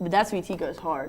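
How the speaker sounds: usual speaking voice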